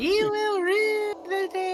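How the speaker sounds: put-on super high-pitched, loud, screaming child voice. Describing a chibi version of a character, imitating his super high-pitched child screaming voice. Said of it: "Like super high pitched".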